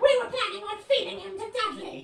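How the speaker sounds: very high-pitched, fast, rattled-off delivery.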